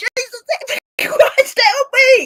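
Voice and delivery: high, stretched-out, drawn-out yell. Recounting a sick man calling out for help; retelling someone yelling for help. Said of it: "he's yelling".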